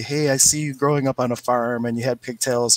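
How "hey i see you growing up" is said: ordinary delivery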